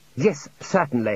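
plain reading voice

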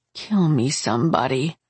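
ordinary talk

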